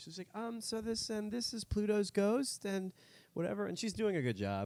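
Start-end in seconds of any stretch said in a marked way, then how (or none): 0.3-3.7 put-on hesitant, nervous teen voice, pitched up. Retelling how a woman presented to the group: imitating a nervous high schooler. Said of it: "like nervous high schooler".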